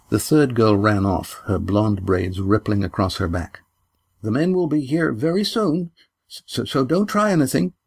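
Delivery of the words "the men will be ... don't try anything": high, wavering, shaky, quavering voice. A girl warns a stranger, her voice quavering. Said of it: "Her voice quavered".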